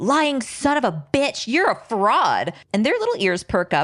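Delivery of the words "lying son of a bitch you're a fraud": mock high, raging, accusing, angry yell. Retelling a woman heard from another room: imitating a woman yelling. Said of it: "just yelling".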